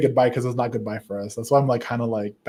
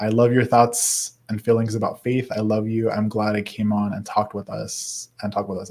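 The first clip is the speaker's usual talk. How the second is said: plain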